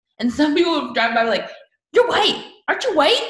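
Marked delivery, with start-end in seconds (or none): 1.9-3.3 shrill, very high-pitched, accusing yell. Recounting what people yelled at a man from passing cars, retelling a yell. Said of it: "yelling at him".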